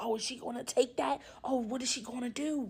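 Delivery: hushed half-whisper, low and soft. Recounting coworkers gasping after a woman's outburst; imitating coworkers' half-whispers. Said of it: "I hear whispers like".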